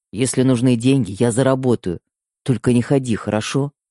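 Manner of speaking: ordinary delivery, nothing marked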